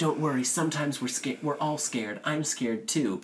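mock half-shouted mild, light yell. Retelling a movie scene, yelling through a locked door: imitating someone yelling. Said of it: "Eddie Murphy's yelling through the door".

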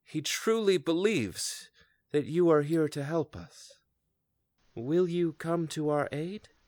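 put-on elderly female dwarf voice. A game master voices a female dwarf addressing the party, in a feminine dwarf voice. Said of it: "Feminine dwarf".

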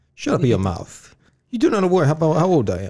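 put-on heavy Italian accent. A speaker talks to the others in a heavy Italian accent. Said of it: "my heavy Italian accent".

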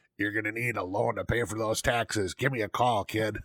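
rough, gruff, gravelly rasping smoker voice. Retelling what the sponsor said while handing over his card, in a gruff, gravelly cigarette voice. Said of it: "gruff cigarette, gravelly voice".

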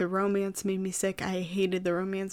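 plain

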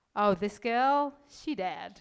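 terrible put-on American accent. Quoting an Instagram post about old photos; terrible American accent. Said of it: "Sorry about the terrible American accent there".

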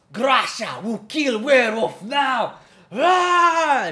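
very loud, very high-pitched battle cry. Voicing a charging axe warrior character: yelling a battle cry. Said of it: "She yells out".

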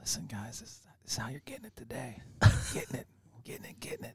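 hushed, breathy ASMR whisper. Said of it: "You gonna go A S M R on us?".

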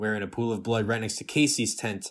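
ordinary delivery

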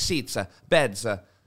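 slow put-on German accent, spoken word by word. Speaker recounts speaking to her in German without knowing German, fake German accent. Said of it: "I just say words in like a German accent".

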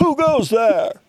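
high, shouted voice. A rock gnome on a ledge challenges you as you walk in, shouting. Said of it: "one of them shouts out".

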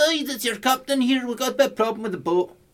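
put-on loud, very high-pitched Scottish accent. Playing the boat's captain addressing his crew: Scotty voice. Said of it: "He sounds like Scotty, the engineer".

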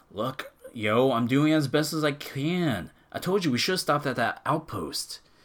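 fed-up, defensive complaining. Retelling what a man fixing the engine said back to the woman, acting frustrated.

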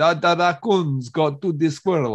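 put-on Transylvanian-accented speech. Telling a story, the speaker voices an orphan caught cooking a squirrel: Transylvanian accent. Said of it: "I'm making her Transylvanian".

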